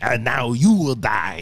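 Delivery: slow, deliberate, each word drawn out. Showing how people usually do the villain: imitating the Emperor. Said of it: "Every time we do the Emperor".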